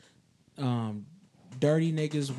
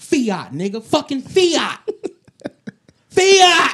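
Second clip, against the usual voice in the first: all-out yell, very high, very loud and shrill; 12 semitones higher, 13 dB louder than usual. During a group debate about music, one speaker breaks in; screaming. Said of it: "Stop screaming!".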